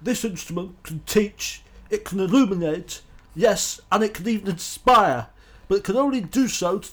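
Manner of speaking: very loud, booming, slow, measured newscaster delivery. Offering to read a passage as an impersonation, in Murrow impersonation. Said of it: "I can try and do it in a Murrow impersonation".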